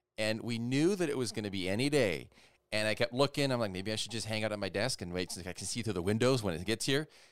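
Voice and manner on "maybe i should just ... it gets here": normal talking voice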